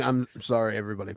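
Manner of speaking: broadcast announcer voice. Quoting a broadcaster's on-air apology: Thom Brennaman apology voice. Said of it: "the Tom Brenneman".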